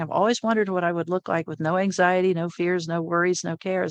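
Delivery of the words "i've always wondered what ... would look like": usual speaking voice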